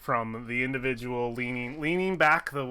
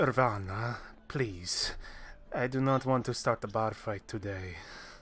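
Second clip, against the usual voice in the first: put-on hushed, soft-spoken, quiet young man's voice; 3 semitones lower, 3 dB quieter than usual. Playing a young man across the table who pipes up to Irvana: quiet young man voice. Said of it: "a more quiet voice".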